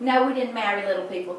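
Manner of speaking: plain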